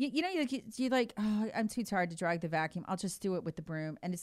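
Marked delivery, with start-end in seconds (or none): none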